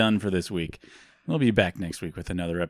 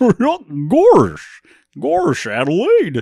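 high, loud, swooping whoop; 12 semitones higher, 9 dB louder than usual. Asked by a listener to do Goofy, the speaker performs it: Goofy voice. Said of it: "Please do Goofy".

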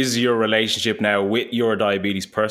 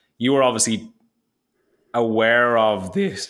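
voice cracking, breaking mid-sentence; 2 semitones higher than usual. Asking the other speaker a question, voice cracking. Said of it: "there's my voice crack again".

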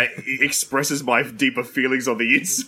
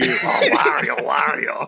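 put-on whispering. Joking about a twin whispering to someone: mock whisper. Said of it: "Your twin starts whispering to you".

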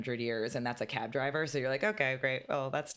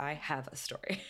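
put-on dramatic gushing tone, quieter; 6 dB quieter than usual. Retelling how a friend walked in: imitating a friend's dramatic tone. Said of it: "that kind of tone".

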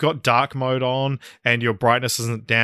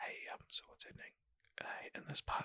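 whispered under the breath, hushed. Showing one type of whispering during a movie: whispering a question. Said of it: "two types of whispering".

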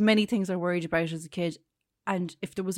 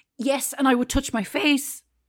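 voice breaking with emotion, cracking and pitched up; 6 semitones higher than usual. Describing weeks of worried sleepless nights, voice cracking with emotion. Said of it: "my voice cracked the motion there".

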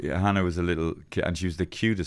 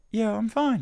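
put-on high little-boy voice. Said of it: "his little voice would go".

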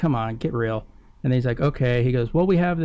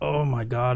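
put-on American accent, switched into. Retelling a reaction, imitating Heather in an American accent. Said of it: "in the American accent".

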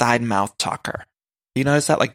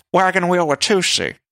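put-on deep diva voice, pitched higher; 6 semitones higher, 3 dB louder than usual. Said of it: "That's my [name]".

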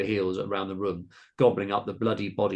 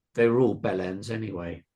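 plain

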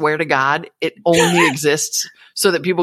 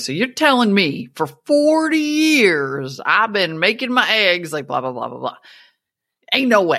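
put-on Southern accent, relaxed storytelling delivery; 3 semitones higher than usual. Describing a man's funny online videos, imitating his southern accent. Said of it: "he's got the Southern accent".

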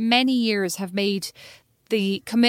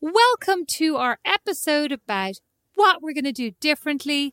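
put-on British cookery show host voice; 5 semitones higher than usual. Co-host trying out an episode intro, in a British cookery show host voice. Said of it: "you always sound like you're like a British cookery show host".

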